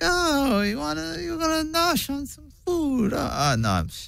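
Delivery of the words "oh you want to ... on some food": very high-pitched New York grandmother voice. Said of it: "Now let's hear it".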